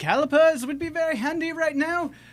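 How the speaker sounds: shrill, very loud, high-pitched shouting yell. Speaking in character and calling out to someone, shouting. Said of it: "I'll just shout then".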